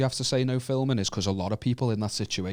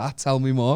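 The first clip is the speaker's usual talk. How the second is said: ordinary talk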